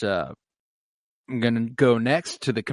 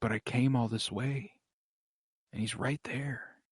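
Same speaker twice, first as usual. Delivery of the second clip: soft, thoughtful, sad tone. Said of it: "this real thoughtful sadness in his voice".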